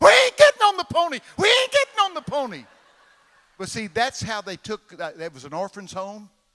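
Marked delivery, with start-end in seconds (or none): 0.0-2.6 shrill, very high, loud screaming. Recalling a childhood scene with his brother, retelling kids screaming. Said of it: "we started screaming".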